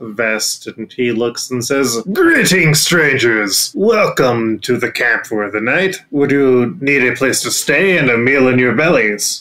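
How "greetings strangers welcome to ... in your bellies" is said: burly man's character voice. Voicing a man greeting travelers at a camp, burly man's voice. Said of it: "a very burly looking man".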